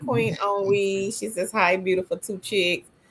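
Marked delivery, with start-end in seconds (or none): none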